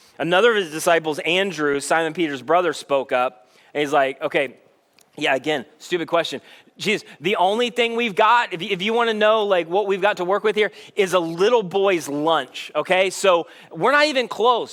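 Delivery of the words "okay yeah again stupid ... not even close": ordinary talk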